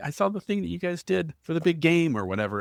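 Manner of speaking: high, gushing, excited tone.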